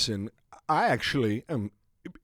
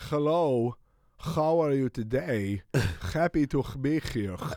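mock Hebrew accent with lots of phlegmy sounds. Retelling giving a speech in front of the whole family, in a phlegmy fake hebrew accent. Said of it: "A lot of phlegm".

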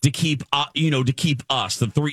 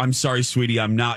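usual speaking voice

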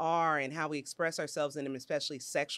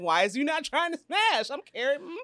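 put-on irritated salty voice, higher and louder; 9 semitones higher, 4 dB louder than usual. Retelling a Sex and the City scene: mock-salty Carrie voice. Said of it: "Carrie got all salty".

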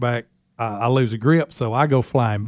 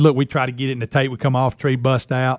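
plain

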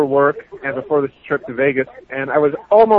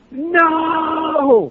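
mock, shrill, very high, stretched-out screaming no; 13 semitones higher than usual. Retelling being hit by a car on a bike: retelling own scream. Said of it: "I was screaming at her".

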